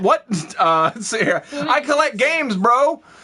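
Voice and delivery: ordinary talk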